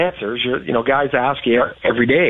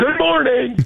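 acted-out huge, loud booming voice pitched very high; 11 semitones higher than usual. Retelling how a man greeted a silent guy every morning: big booming voice. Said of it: "big booming voice".

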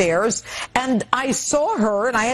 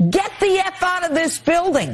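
mock yelling, pitched up; 7 semitones higher than usual. Recounting being thrown out of a building as she yells at him, retelling someone yelling. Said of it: "she's yelling at me".

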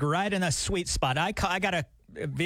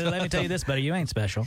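ordinary talk

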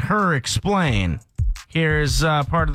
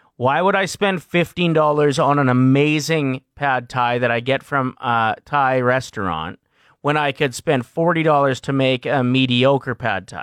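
ordinary talk, nothing marked

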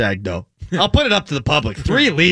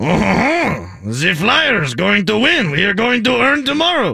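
put-on Czech-accented English, pitched higher; 5 semitones higher than usual. Doing Radko Gudas after being asked for more: imitating Radko Gudas. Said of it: "Your dialect is perfect".

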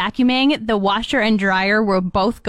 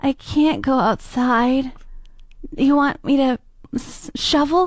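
mocking put-on sick voice, much higher pitched; 4 semitones higher than usual. Asked what he complained about, the speaker acts him out: imitating his man-cold voice. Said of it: "imitation of the voice of his man cold".

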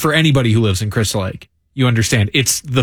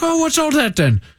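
put-on Irish accent, spoken very high. Retelling a man's question in a story, in an irish accent. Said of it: "Is that an Irish accent?".

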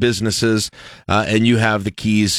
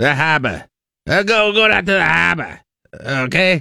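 Boston accent drifting to New Jersey accent; 7 semitones higher than usual. Asked to say the coffee house name in their best boston accent, put-on boston accent. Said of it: "started so... in Boston and ended up in Jersey".

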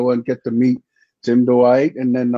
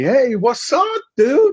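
put-on shrieking, very high, swooping scream; 13 semitones higher than usual. Retelling a roommate's first greeting on move-in day: imitating Tim Dwight screaming. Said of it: "he was screaming at me".

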